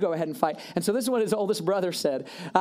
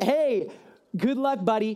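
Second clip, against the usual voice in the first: sarcastic put-on king voice, higher; 3 semitones higher than usual. Retelling the king sending David off, in a sarcastic voice. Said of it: "here's kind of my version of it".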